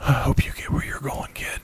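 hushed whisper, holding back a sob. Catla, alone after the boy vanishes, speaks into the empty air: whispered. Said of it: "she whispered into the empty air".

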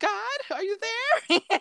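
very high, pleading call. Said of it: "she was like".

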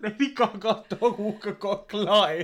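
speaking through laughter. Sharing news with another speaker, laughing while talking. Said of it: "I don't know why I'm laughing".

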